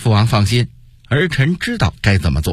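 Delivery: ordinary delivery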